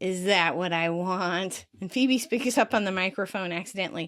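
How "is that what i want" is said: slow, parroting echo of the words. Retelling a sitcom scene, Ross echoing Joey's question: imitating Ross mimicking. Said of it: "Ross mimics".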